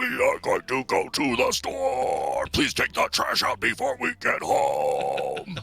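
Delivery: low, rough, creaky death metal growl, home stretched. After talk about death metal, trying that voice; death metal voice. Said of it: "hearing you do it just now".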